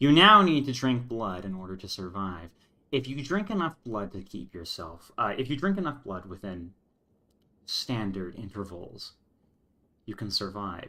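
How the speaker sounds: perfectly calm, even voice. Recounting what a woman in a story says, retelling in a completely calm voice. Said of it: "like this this completely calm voice".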